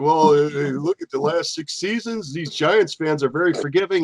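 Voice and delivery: dry, mocking, sarcastic tone. Retelling an announcer's comment on Giants fans: imitating Colin Cowherd being sarcastic. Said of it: "Colin Cowherd was being sarcastic".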